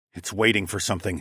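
plain

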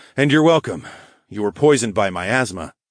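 ordinary delivery

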